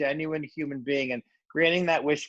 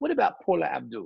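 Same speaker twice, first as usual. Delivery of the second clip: clumsy, bad put-on British accent. Retelling a man's reply to a request for celebrity help, in a bad British accent. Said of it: "he said in his British accent".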